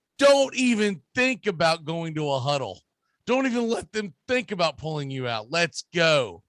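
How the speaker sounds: plain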